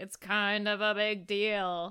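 spooky put-on ghost voice, slow and drawn-out. Podcast host announces a big episode: ghost voice. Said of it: "I was a ghost for a second".

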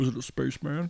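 put-on deep villain voice. Joking about a paranormal photo, doing a best attempt: Kylo Ren voice. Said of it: "I'm gonna do my best Kylo Ren".

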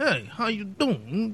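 mafia-style Queens accent. Describing an actor's accent in a movie, the speaker does a Queens mafia accent. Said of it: "Queen mafia accent".

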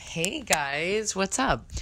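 voice cracks and breaks. Podcast host opening the episode by greeting listeners, voice cracking. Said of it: "did you hear that crack in my voice?".

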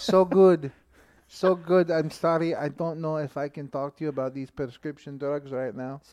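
put-on Spanglish accent. Retelling how they answer a telemarketer: put-on Spanglish accent. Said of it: "And then you go to some kind of Spanglish?".

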